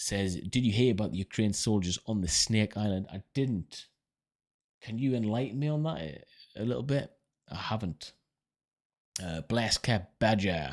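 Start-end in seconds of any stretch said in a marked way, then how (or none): 9.4-10.7 relaxed American accent. Saying a name while discussing Ukrainian soldiers: American accent. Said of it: "I don't know why I'm saying that in an American accent".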